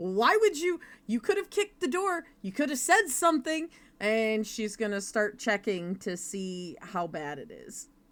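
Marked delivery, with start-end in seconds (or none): 0.0-3.7 high, pitched-up yell. Voicing a character checking a stabbed companion, yelling at him. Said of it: "while yelling at him".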